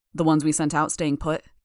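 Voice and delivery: ordinary talk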